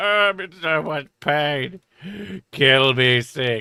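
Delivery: put-on, drawn-out pained groaning in misery. Retelling how she spent the night in pain: imitating someone moaning in pain. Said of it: "She spent most of the night just going".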